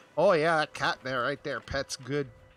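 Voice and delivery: put-on heavy Boston accent, laid on thick. Describing a video, imitating a man with a thick Boston accent. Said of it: "a man with a thick Boston accent just going".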